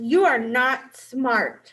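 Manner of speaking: loud, slow, mean, cutting, unkind tone. Reading a card aloud to show how words can sound, in an unkind tone. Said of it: "Did you hear the way I said that? That didn't sound very kind".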